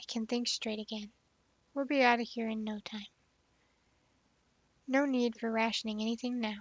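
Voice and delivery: ordinary delivery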